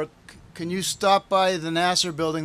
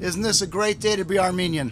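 normal talking voice

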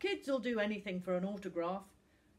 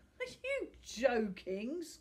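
scornful, scoffing tone of disbelief; 3 semitones higher than usual. Sam answers Finn's request to Tom, scoffing. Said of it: "scoffed Sam".

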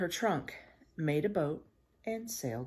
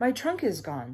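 usual speaking voice

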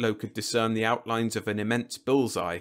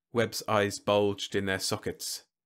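usual speaking voice

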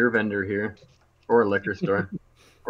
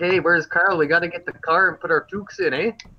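exaggerated Canadian accent; 7 semitones higher than usual. Giving an example of the very stereotypical Canadian accent from the East. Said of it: "the very stereotypical Canadian accent".

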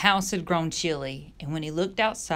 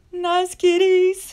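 shrill, frightened, very high, very loud squeal; 14 semitones higher, 10 dB louder than usual. [name], fleeing from tigers, squeals. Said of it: "squealed [name]".

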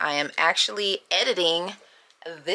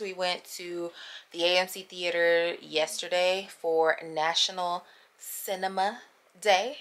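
very slow, soft, drawn-out, deliberate delivery; 6 dB quieter than usual. Telling viewers about the last clip, speaking very slowly. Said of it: "I said it so slow like that".

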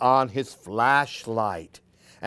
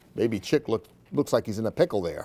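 plain

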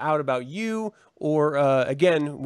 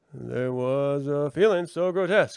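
put-on voice with long dramatic pauses. Imagining a famous narrator reading a poem aloud: Barack Obama impression, dramatic pauses. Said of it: "for fucking Barack Obama to be like".

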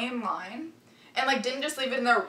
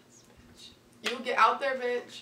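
plain

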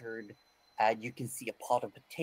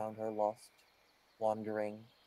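plain

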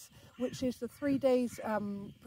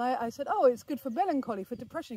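usual speaking voice

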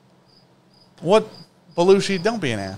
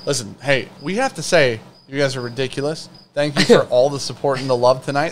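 ordinary delivery

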